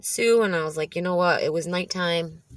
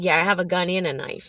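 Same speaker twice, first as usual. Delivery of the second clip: imitated mouthy, cheeky tone. Retelling own answer to an officer asking about guns: imitating own mouthy reply. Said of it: "being mouthy".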